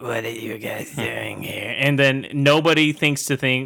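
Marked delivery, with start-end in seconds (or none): 0.0-1.7 low, creaky, rough, eerie creepy voice. Retelling a horror film scene, imitating the nun's voice. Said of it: "she has, like, a voice like this".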